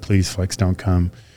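quiet, mock-pleading tone. Retelling how Andrew begged the speaker, imitating Andrew begging. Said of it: "Andrew begged me".

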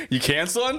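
high, eager, enthusiastic tone.

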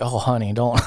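put-on Southern accent. Reacting to a movie character's choice of shoes: put-on southern accent. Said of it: "you did the Southern version".

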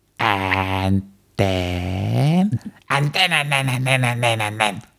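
put-on imitated woman's voice. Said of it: "It is an impression of the woman".

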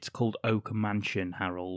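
usual speaking voice

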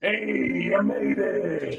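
deep, rough, booming, modulated voice. Voicing Bram as the four arrive in the Builders Guild hall, Bram voice through modulator. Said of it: "I'll click on my voice modulator".

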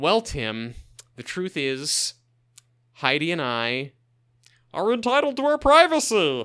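animated puppet voice with wildly swooping pitch. Acting out someone's reply to Tim, the speaker sounds like Muppet Baby Gonzo. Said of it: "It sounded a little bit more like Muppet Baby Gonzo".

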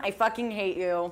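dry, flat, expressionless deadpan delivery. Describing their own acting method, the speaker demonstrates a line deadpan. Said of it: "It's deadpan".

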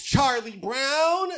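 put-on over-enunciated high kid voice. Discussing cartoon child voices, showing how they all talk: Charlie Brown cartoon kid voice. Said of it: "they all talk like this".

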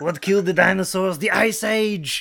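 hammy villain voice, slightly high. Joking about a Mister Freeze movie: bad Arnold Schwarzenegger impression. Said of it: "I sound like the worst Arnold Schwarzenegger impressions".

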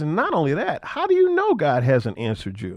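plain

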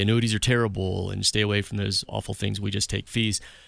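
normal talking voice

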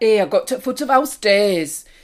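put-on northern English accent. Imitating how relatives up north talk, in a northern English accent. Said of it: "they talk like that".

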